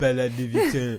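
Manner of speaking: exaggerated, overly French accent. Giving a shout-out to a title, in an overly French accent. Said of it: "Nothing's more fun than doing an overly French accent".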